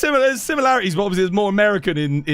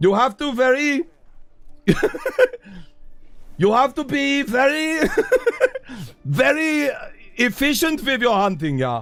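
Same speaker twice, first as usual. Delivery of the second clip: put-on angry German accent, yelling, higher; 6 semitones higher than usual. Playing a character scolding someone for killing the monster, yelling angry German. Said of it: "try and do the angry German that is yelling".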